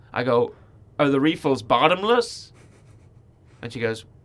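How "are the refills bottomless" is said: put-on American accent. Retelling asking a lady a question again, in his American accent. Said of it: "in my American accent".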